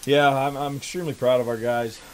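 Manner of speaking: breathless, out of breath. Right after the game, the speaker talks about the team: out of breath. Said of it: "I gotta catch my breath".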